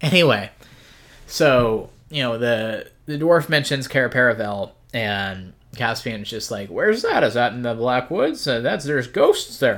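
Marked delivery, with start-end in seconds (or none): 6.7-9.8 put-on old man voice with swooping pitch. Retelling a book scene, voicing Caspian asking where Cair Paravel is: Caspian as an old man. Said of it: "he's an old man in my, uh, my headcanon".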